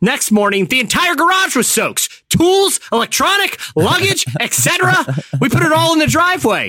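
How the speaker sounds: very high, put-on furious angry-dad voice. Reading a family story aloud as the dad, mock-angry, as the angry dad. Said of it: "I'm going to read it as if I'm the angry dad".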